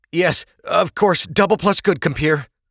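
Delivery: very high, trembling voice. Narrator reads a man's reply to an order to unrobe, quivering.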